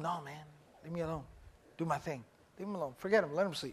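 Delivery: low, soft, hushed dismissive tone.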